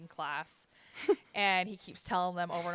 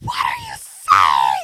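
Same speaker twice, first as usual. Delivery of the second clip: mock scream at top of lungs, much louder; 10 semitones lower, 16 dB louder than usual. Speaker retells what a woman shouted at a man, retelling a woman's scream. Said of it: "She's like screaming at the top of her lungs".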